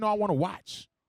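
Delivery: ordinary delivery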